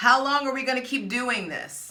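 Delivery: loud high-pitched yelling. Addressing a group of listeners directly, yelling at them. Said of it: "I don't know why I'm yelling at y'all".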